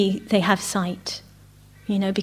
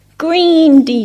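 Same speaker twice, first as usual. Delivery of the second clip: put-on very loud, high-pitched small child's shout; 5 semitones higher, 8 dB louder than usual. Retelling a little girl calling out bead colours: imitating a child shouting. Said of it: "she shouts out".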